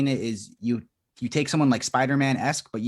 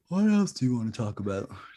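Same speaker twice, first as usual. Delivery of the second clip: put-on sleepy yawning. A podcaster recalls their old late-night recordings: retelling a sleepy yawn. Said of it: "I'm like yawning, being like".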